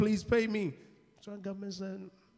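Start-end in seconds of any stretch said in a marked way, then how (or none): 0.0-0.7 mock crying, quieter. Acting out an ambassador begging a government for pay: imitating someone crying. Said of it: "He's crying".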